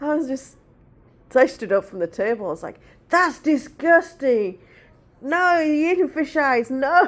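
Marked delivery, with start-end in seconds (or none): 3.1-7.1 mock, high, loud, full-voiced little-kid yell. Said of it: "At the top of my voice".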